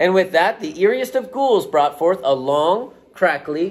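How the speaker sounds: ordinary delivery, nothing marked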